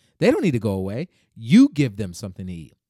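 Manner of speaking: sarcastic yet angry tone. Quoting Jesus' reply to the disciples: imitating Jesus, sarcastic yet angry. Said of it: "almost like a sarcastic yet angry tone".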